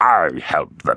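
fierce, gurgling voice. Narrator reading a raptor villain's line from the doorway, fierce and gurgling. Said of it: "fierce and gurgling".

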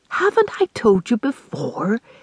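quiet whispering. The mother, in a last attempt at discipline, whispering. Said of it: "she whispered".

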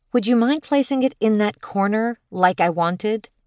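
sugary, sweetly helpless voice. Narrator reads a woman asking the delivery guy, sweet poor-little-me act. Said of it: "She smiled sweetly".

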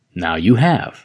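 ordinary delivery

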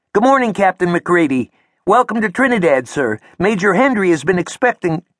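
very high-pitched voice. Narrator reads a corporal saluting and greeting an arriving captain, high-pitched voice. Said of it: "speaking in a high-pitched voice".

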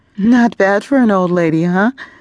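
laughter held back. Relieved, a woman speaks to the boy, struggling to hold back laughter. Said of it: "struggling to hold back laughter".

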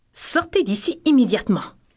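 firm, authoritative, no-argument commanding tone. Intonation exercise to repeat, given the cue 'Commandement': commanding.

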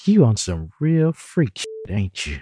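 playful, giggly, flirtatious teasing tone. [name] responds as Cartier parts his lips for the gum, flirtatious. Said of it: "She flirted".

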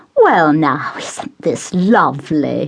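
slow, bright, beaming exclamation. A mother turns back to her guest Tristram, beaming. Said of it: "she beamed".

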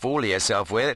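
plain

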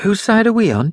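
put-on anxious, nervous boy's voice, very high. The narrator voices a Norse boy asking his lord a question: nervous question. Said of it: "he asked nervously".

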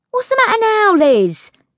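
cross, very high-pitched demanding tone. She questions the little scullery maid, demanding crossly. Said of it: "she demanded crossly".

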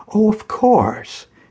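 relieved, easing off, pitch lifting. Dietrich, addressed as doctor, answers Mrs. Fitzgerald about the key: relieved. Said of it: "he said with a sense of relief".

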